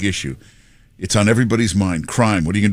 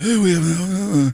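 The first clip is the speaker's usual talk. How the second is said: put-on mumbling voice, higher pitched; 10 semitones higher than usual. Acting out a phone call to Joe, imitating Biden mumbling. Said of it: "and he's mumbling".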